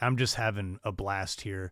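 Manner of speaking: plain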